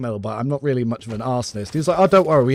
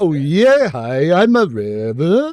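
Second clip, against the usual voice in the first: exaggerated put-on Norwegian accent, very slow, swooping; 4 semitones higher, 4 dB louder than usual. Joking about overcorrecting a learned accent to tease a friend: mock exaggerated Norwegian accent. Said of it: "I'll overcorrect my bit".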